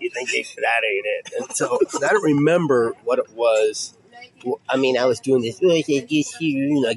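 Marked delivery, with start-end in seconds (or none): 5.6-6.7 put-on sagging, droopy voice.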